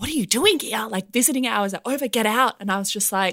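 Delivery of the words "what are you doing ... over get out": put-on whisper, higher pitch. Retelling how a nurse found a sleeping visitor: imitating a nurse whispering. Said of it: "the nurse came in and whispered to me".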